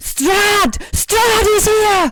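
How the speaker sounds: high, shrill, loud top-of-the-lungs scream. Voicing Esmeralda raising the alarm as bats swirl: screaming at the top of her lungs. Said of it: "Esmeralda screams at the top of her lungs and shouts".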